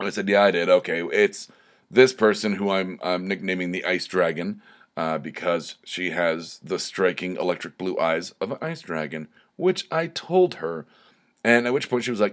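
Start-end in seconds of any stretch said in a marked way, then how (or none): none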